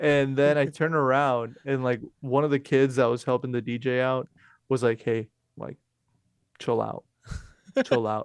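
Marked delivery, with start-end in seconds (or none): 5.0-8.3 acted, earnest, no-joke, dead serious tone. Retelling what a kid helping the DJ said: imitating someone serious. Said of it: "he looked at me, like, all serious".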